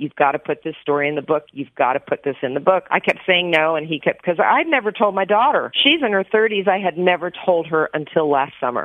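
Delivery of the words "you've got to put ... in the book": plain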